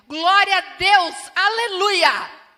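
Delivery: very loud, drawn-out, forceful intonation. Imitating how the sisters at the Assembleia church speak: stronger, forceful intonation. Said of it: "a entonação é mais forte".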